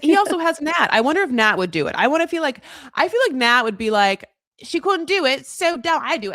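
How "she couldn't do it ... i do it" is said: bad Australian accent drifting British, higher pitch. Imagining what someone would say, in a failed Australian accent that sounds UK. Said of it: "that was a U K accent".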